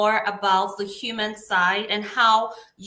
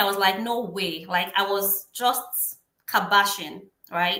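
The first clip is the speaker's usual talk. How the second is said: usual speaking voice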